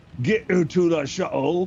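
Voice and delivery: very loud, high-pitched put-on orc voice. Playing a game, voicing a character ordering Jello to the shuttle, in an orc voice. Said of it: "Gotta get out the orc voice".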